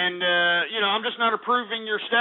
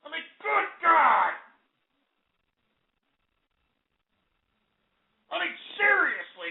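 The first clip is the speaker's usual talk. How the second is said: furious angry outburst, higher pitch; 9 semitones higher than usual. Ranting at a caller who says he is a brony: furious ranting. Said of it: "I'm just gonna calm down".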